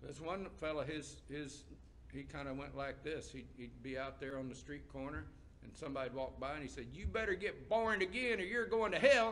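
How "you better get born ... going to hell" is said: put-on harsh, severe, loud voice, pitched up. Speaker imitating a man on a street corner addressing passersby, imitating a harsh street-corner warning. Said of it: "It sounded very harsh".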